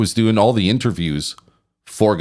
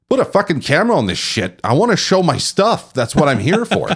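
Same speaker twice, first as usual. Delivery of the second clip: mock fed-up, irate, exasperated outburst, pitched up; 7 semitones higher than usual. Retelling what an irate guy at the show said: imitating Remco sounding irate. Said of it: "I could tell he was irate".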